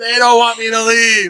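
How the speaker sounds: high, yelled screaming outburst. Retelling a woman told to leave a show, pointing at the audience, imitating someone screaming. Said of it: "she starts screaming".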